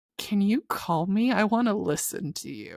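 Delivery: acted, relishing, gleeful, cruel-sounding, sadistic tone. Retelling what she asked near the last chapter, in a mock-sadistic tone. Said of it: "say that a little less sadistically".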